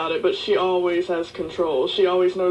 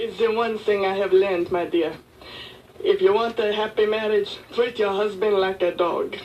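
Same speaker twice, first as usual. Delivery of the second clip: put-on French accent, in character. An actor, asked for some of Jermaine's advice, Jermaine's French accent. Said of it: "I do a French accent".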